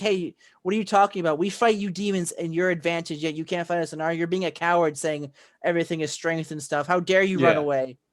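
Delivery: ordinary talk, nothing marked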